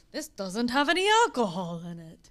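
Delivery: bad, failed Scottish accent with vampire-like tinge. Retelling what a scottish man said about a drink: bad scottish accent. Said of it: "I didn't get my Scottish".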